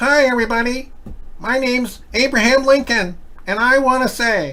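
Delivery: very high voice, slow and drawn out. Having heard Lincoln had a high voice, speaker tries it: high-voiced Abraham Lincoln. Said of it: "I heard he had a high voice".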